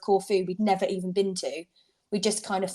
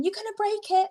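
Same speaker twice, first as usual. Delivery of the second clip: mock, very high-pitched, shrill yelling; 13 semitones higher than usual. Telling of dragging a new suitcase uphill, retelling a shout at him. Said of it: "I'm shouting at him going".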